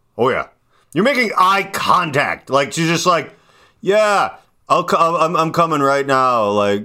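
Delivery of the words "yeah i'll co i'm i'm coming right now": mock drowsy, sleepy, half-awake, a little tired. Imitating another speaker answering while half asleep: imitating someone a little tired. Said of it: "like someone who's a little tired".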